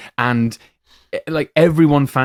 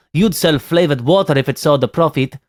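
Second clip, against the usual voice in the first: terrible, fake French accent throughout; 2 semitones higher than usual. Quoting an actor's line from a film in his terrible french accent. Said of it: "That is his French accent".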